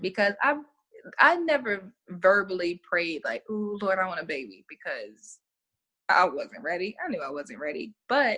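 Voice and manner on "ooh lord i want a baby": usual speaking voice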